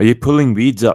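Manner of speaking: put-on very loud, distinct Glaswegian accent. Voicing Max speaking to Maeve, in a Glaswegian accent as Max. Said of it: "voice in a very distinct uh, Glaswegian accent".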